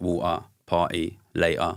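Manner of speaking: glottal East London T's in each word. Showing how East Londoners say these words: East London dropped T's. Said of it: "in East London, we don't pronounce our T's".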